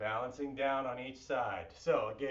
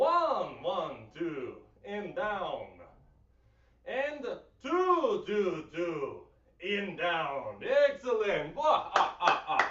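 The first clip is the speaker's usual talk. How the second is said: every number stretched out slowly; 4 semitones higher, 4 dB louder than usual. Leading a workout, the speaker counts reps in a Count from Sesame Street voice. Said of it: "Why do I sound like the Count from Sesame Street?".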